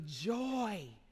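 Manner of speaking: strong stress placed on the word joy. Speaking to the audience about fundraising: stress on joy. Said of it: "Y'all see how I said that word?".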